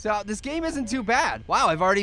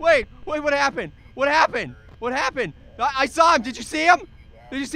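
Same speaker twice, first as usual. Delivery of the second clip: frightened, panicked yelling, higher pitch; 5 semitones higher, 4 dB louder than usual. Playing a game, after a figure in the room vanishes, frightened yelling. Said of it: "(frightened yelling)".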